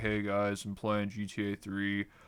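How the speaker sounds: slow, flat, droning bored monotone. Mimicking himself narrating a game video: put-on flat, bored monotone. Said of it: "like monotone".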